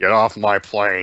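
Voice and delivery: put-on, mumbling actor voice. Imitating a film line after describing the actor's mumbling: Harrison Ford impression. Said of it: "occasionally he'll do a".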